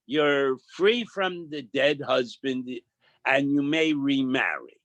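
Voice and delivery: ordinary delivery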